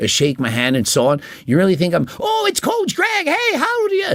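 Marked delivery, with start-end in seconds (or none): 2.2-4.1 frantic, very high pitched scream. Mocking his own loud on-camera voice for greeting a gym fan: mock screaming like the Aladdin parrot. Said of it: "talking like the parrot from Aladdin".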